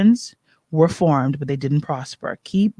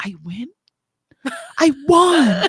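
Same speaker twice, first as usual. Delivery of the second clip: dazed, stunned disbelief, very high and very slow; 11 semitones higher than usual. Retelling own reaction on hearing of winning an award: imitating own past shock. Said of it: "when I was in shock".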